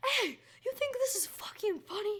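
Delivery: put-on shrill, very high, furious angry scream. Retelling how a neighbour came out the door: imitating a man screaming. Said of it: "he just screams".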